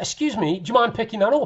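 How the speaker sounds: loud yelling. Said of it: "I bawled him out. I shouted to him".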